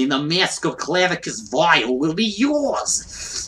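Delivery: put-on slow, drawn-out New Jersey accent. Quoting how he sounds, in a New Jersey accent. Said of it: "He sounds like he belongs in New Jersey".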